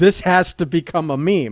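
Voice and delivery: ordinary talk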